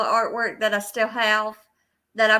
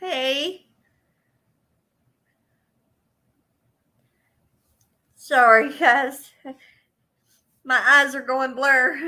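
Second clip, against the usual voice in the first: holding back tears, slower; 3 semitones higher than usual. Greeting viewers by name, apologizing, holding back tears. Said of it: "I'm trying not to cry".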